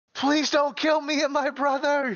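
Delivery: very high-pitched scream, projected far. Screaming a plea out into the ether so Bloop hears: screaming in Dave's voice. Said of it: "I'm going to scream out in Dave's voice".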